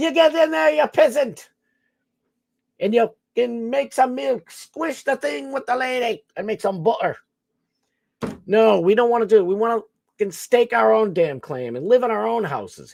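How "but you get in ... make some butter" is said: put-on Irish accent, pitched up, played for laughs. Mid-bit, the speaker slips into a put-on irish accent. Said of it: "I don't know why I'm Irish in this one".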